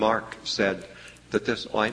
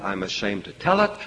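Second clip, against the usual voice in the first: ordinary talk, nothing marked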